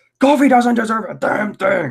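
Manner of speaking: high, angry blow-up. Retelling a classic line where he just blows up, Vince McMahon impression. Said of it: "That's my Vince McMahon impression".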